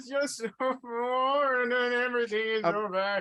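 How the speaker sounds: high, whiny crying through tears. Playing a character who breaks down during the scene: whiny crying. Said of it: "I don't know why I'm crying".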